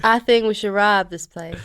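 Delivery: put-on southern American accent. Asked to try an accent on a given line, in a southern American accent. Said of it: "But that's southern".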